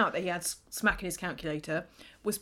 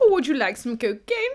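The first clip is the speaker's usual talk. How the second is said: put-on posh voice, higher and louder; 3 semitones higher, 7 dB louder than usual. Acting out the drug dealer from the show: posh drug dealer voice. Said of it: "A very posh Timothy Top Toff drug dealer".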